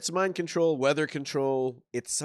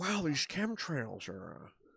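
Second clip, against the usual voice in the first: put-on laid-back drawl, quieter; 8 dB quieter than usual. Doing an impression after another speaker asks for it: Owen Wilson voice. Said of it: "now do Owen Wilson".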